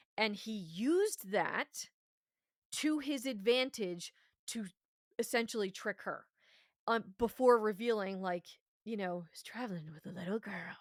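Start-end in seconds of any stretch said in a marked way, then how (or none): 9.3-10.8 soft, creepy villain voice. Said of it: "with his creepy voice".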